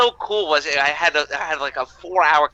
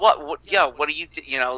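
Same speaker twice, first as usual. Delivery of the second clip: plain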